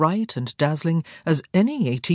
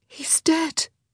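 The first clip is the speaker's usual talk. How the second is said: very high, grief-struck, heartbroken whisper; 12 semitones higher than usual. A sister tells her brother that their father is dead, whispered. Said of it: "Daphne whispered".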